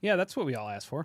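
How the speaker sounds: mocking, sarcastic remark. Speaker reacts to a Stranger Things McDonald's activity book, sarcastic. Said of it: "You said that sarcastically".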